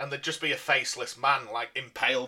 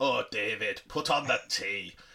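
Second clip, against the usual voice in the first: rough, slow, put-on Scottish accent. The speaker retells what a man would say every night, in an attempted scottish accent. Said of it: "I was going to do a Scottish accent then".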